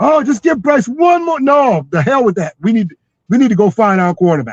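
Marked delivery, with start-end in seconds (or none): 0.0-1.4 screaming, yelling voice like a fan in the stands. Predicting what fans will say after a losing season: imitating fans screaming. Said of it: "the fans are gonna be screaming".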